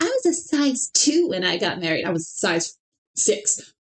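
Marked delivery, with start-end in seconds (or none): 0.0-2.0 grating, swooping, sing-song annoying woman voice. Mocking one of those annoying women who brag about their wedding size: imitating an annoying woman. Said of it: "One of those annoying women that was like".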